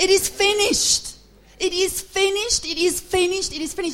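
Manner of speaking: victorious triumphant scream, high and loud. Speaker telling the church of a dying man's last words, retelling a victorious scream. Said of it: "in his victory, he screamed".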